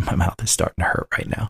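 quiet, low-voiced talk.

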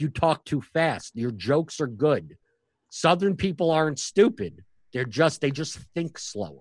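slow, unhurried, patient delivery. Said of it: "he's like".

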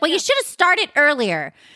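put-on cranky irritation, high and swooping pitch. Retelling a scene, imitating Ramona as she complains: imitating hangry Ramona. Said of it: "she's so freaking hangry".

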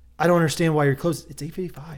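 mock passive, complaining, pleading tone. Retelling a customer's complaint to staff at a shop closing early, imitating her passive tone. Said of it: "very like passively like".

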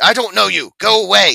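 mock rude brush-off. Retelling a movie scene at a gate intercom: imitating a rude intercom lady. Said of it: "the intercom lady's super rude to her".

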